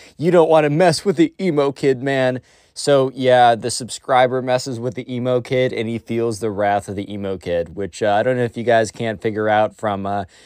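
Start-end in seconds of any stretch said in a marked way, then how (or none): 0.2-2.4 sarcastic, mocking tough-guy swagger and bravado. Mocking a kid who thinks he is a gangster: imitating the emo kid acting tough. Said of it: "He is like".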